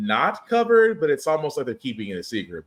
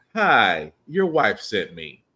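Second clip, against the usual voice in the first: put-on patronizing, superior, talking-down tone; 2 semitones lower than usual. Retelling how Magneto arrived to save someone sent by the wife, mock-condescending Magneto. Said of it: "in the condescending tone that you are".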